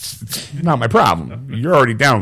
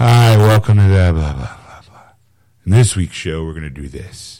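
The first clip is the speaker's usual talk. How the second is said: low, bored, unenthused, going-through-the-motions host voice; 4 semitones lower, 4 dB louder than usual. Imitating other shows' hosts opening a show: imitating a bored podcast host. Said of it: "that doesn't sound like fun at all".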